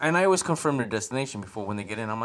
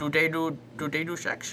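put-on Indian accent; 3 semitones higher than usual. Retelling what a man asked; Indian accent. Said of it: "is that your Indian accent?".

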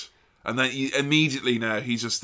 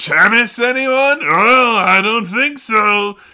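put-on game show host announcer voice, higher and louder; 11 semitones higher, 11 dB louder than usual. Imitating a wrestling commentator calling a match: Vince McMahon commentary voice. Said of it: "he puts on a little commentary voice".

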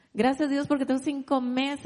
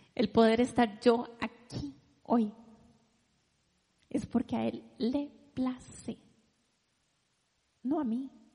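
on the verge of tears; 3 dB quieter than usual. A woman speaking with her daughters and husband there, on the verge of tears. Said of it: "Y ya voy a llorar".

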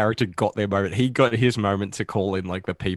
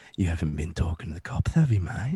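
put-on Australian accent, near-whisper; 3 semitones lower, 3 dB quieter than usual. Describing his role in the crime film Animal Kingdom, Ben Mendelsohn impression. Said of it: "Ben Mendelsohn's like".

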